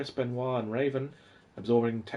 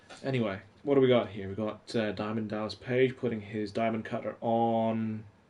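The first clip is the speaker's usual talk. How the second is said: ordinary talk, nothing marked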